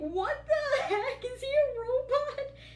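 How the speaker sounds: high-pitched, laughing, disbelieving tone. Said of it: "They're like".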